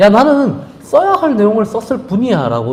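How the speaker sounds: high-pitched mocking delivery.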